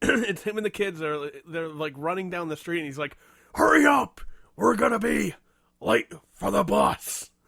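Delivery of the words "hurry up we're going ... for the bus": rough, loud growling superhero voice. Retelling a man in a video rushing his kids down the street, in a Batman voice. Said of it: "in the Batman voice".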